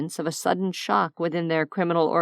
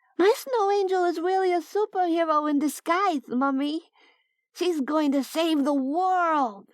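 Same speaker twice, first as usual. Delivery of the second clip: put-on very high child voice, stretching out the word "world"; 11 semitones higher than usual. Narrator reading the girl Trin calling to her mummy, Trin's high voice. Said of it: "Trin called in a high voice".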